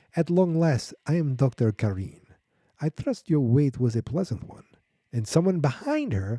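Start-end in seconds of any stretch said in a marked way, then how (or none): 0.1-4.6 put-on woman's voice. Retelling a scene where a woman greets Doctor Orlov: Doctor Karin voice. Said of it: "I can't help but do the voice".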